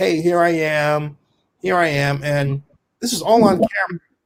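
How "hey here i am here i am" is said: acted, slow, drawn-out, teasing, goading tone. Retelling how a man taunted someone from the parking lot: imitating someone taunting. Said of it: "he's taunting him".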